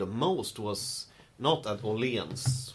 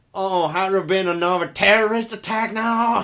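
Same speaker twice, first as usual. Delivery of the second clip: mock drunk voice, very loud and high; 9 semitones higher, 11 dB louder than usual. Retelling what a drunk man on the bus said: imitating a drunk man. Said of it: "they're so fucking drunk".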